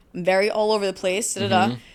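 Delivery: normal talking voice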